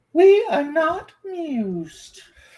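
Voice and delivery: pitch way up, swooping grandly. Ending a rambling remark about entertaining themself, the speaker does a Queen Victoria impression. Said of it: "That was Queen Victoria".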